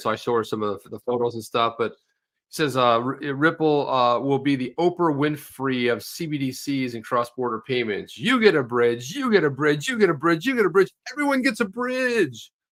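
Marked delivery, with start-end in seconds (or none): 8.2-12.5 high-pitched, sneering, taunting put-on voice. Sharing a line about Ripple with a co-host, do your Gary voice. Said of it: "use that voice anytime you want to hear insulting someone".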